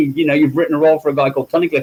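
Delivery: plain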